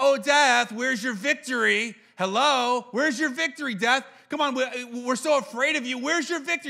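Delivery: jeering, mocking, goading taunt, daring tone. Speaker acts out the verse as if taunting death, taunting death. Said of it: "like this is like taunting".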